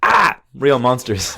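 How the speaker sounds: slow, drawn-out, energetic delivery.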